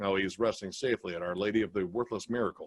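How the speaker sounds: dry, low, dead straight deadpan. Quoting a favorite movie line: deadpan Leslie Nielsen delivery. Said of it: "that straightforward delivery".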